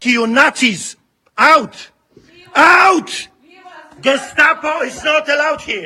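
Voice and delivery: stern, forceful delivery. A man orders the Gestapo off his church property, yelling. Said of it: "there's a little bit more yelling".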